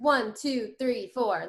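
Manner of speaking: rhythmic counting cadence. Showing a learner how a fast count-in sounds: fast count-in. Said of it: "If you count in fast".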